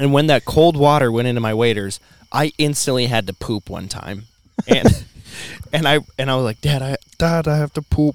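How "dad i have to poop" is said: put-on child's voice. Retelling what they said to their dad out in the water, in a little kid voice. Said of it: "Why is there a little kid voice?".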